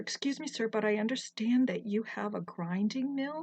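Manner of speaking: ordinary delivery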